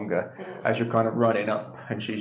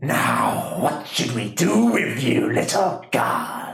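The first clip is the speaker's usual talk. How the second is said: put-on slow, menacing, taunting old hag voice; 3 semitones higher, 4 dB louder than usual. Game master voicing a hag who confronts the player character; elderly hag character voice. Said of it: "As you look up and you see there's a very tall, elderly lady holding your hand. / elderly lady holding your hand. / elderly lady holding your hand. / you can see this hag".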